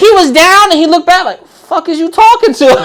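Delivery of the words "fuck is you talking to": furious, hostile, angry tone. Act out someone looking back at you on a set, mock-angry as shit. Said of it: "like angry as shit".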